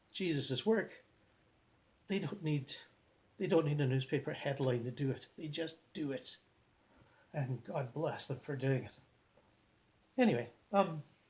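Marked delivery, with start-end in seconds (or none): 0.1-8.9 on the verge of tears, moved, emotional speech. Praising people who quietly help refugees, almost crying. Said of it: "I'm almost crying when I talk about this".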